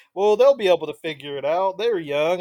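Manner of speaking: put-on Southern American male accent. Quoting someone about ten years older, in a put-on southern male accent. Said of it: "notice I had to add a southern male accent to that".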